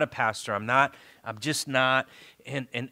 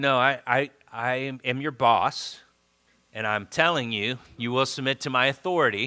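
normal talking voice

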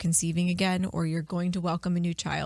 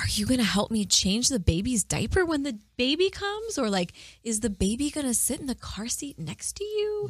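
gentle, sweet, high sing-song voice; 6 semitones higher than usual. A parent demonstrating how they talk to their kids, in a sweet voice. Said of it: "I'm making it sound like I'm really sweet to my kids".

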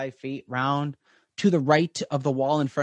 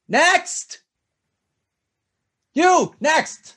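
very high, loud shout, calling out; 14 semitones higher, 7 dB louder than usual. Storyteller voices a tiefling calling from down the hall, shouting down the hall. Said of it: "this voice shouting down".

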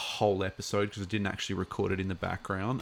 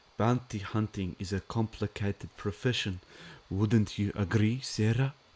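put-on English spoken with a German accent. Doing an accent while reading a viewer's name: Werner Herzog accent. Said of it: "Am I using my Werner Herzog accent?".

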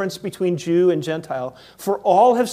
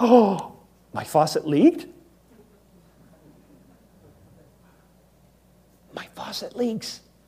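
slow, put-on, feigned astonishment. Acting out a hypothetical reply to a visitor pointing out a leak: imitating own feigned surprise. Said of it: "I'm almost acting like".

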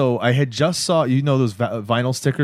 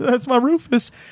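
put-on tearful distress, higher; 12 semitones higher than usual. Retelling a scene where Dan looks in the fridge: imitating someone breaking down. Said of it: "starts to break down".

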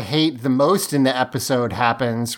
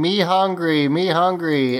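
put-on scream, higher; 4 semitones higher than usual. Retelling a TV scene where a hungry puppet screams: imitating a puppet screaming.

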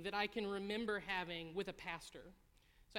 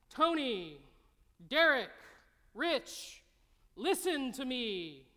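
very loud, very slow, booming, drawn-out heavenly voice; 5 semitones higher, 10 dB louder than usual. Imagining a voice from heaven addressing Tony, Derek and Rich, big booming voice. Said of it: "like a big booming".

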